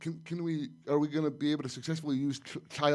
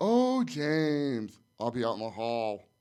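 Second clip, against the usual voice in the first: mock very slow, dripping sarcastic drawl, swooping; 3 semitones lower than usual. Retelling a character's parting line to a general: imitating a sarcastic tone. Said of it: "it was sarcastic".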